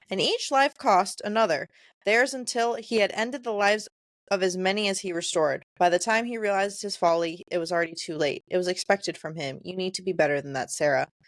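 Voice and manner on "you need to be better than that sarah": ordinary talk, nothing marked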